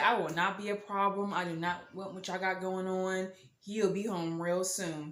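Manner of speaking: ordinary delivery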